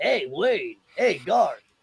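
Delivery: soft, smooth, buttery radio announcer tone. Recalling a guy from Wayne's World greeting Wayne and Gar, do the Handsome Dan radio voice. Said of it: "he had a real good radio voice".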